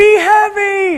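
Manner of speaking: yelling, high and slow, mock yell.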